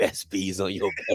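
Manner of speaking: low, mocking, fake Southern dialect.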